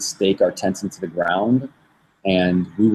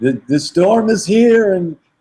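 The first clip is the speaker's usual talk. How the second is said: mock loud, very high, alarmed rising yell; 12 semitones higher, 6 dB louder than usual. Retelling being in a tent during a storm: imitating own past yelling. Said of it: "just yelling, like".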